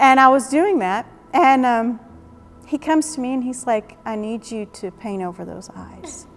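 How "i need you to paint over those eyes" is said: soft, gentle, kindly delivery. Speaker retells what God told her after a conference, retelling kind words. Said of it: "he said it so kindly".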